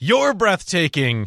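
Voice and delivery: high, mild heckling call from a distance. Retelling how an audience member heckled: imitating an audience member screaming. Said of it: "someone from the audience screams".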